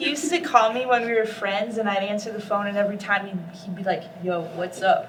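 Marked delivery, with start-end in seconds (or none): 4.2-5.1 low, deep, unfriendly, no-frills delivery. Retelling how a friend used to answer her calls, imitating a deep voice. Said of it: "you were all deep".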